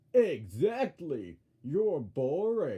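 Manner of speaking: loud, belted character voice with big swoops. Redoing the same line from the episode as Max voice. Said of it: "Max says it, so it's like".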